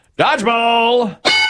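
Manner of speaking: high, slow, drawn-out game show announcer voice.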